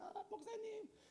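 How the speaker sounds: pleased, sweet, high, soft voice. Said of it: "자기가 좋을 때는".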